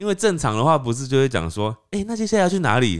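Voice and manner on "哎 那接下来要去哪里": lively, eager, bright, cheerful, pitched up. Showing the normal way to ask where to go next, bright cheerful tone. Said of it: "听起来好像就很雀跃".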